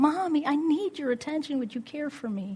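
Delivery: put-on high, whiny, plaintive toddler crying voice. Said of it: "that baby screamed out".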